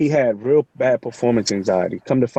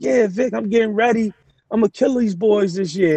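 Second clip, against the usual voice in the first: mock hyped-up teenager voice, very high; 9 semitones higher than usual. Retelling a young neighborhood kid's reply about the season: imitating an excited kid. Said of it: "real excited".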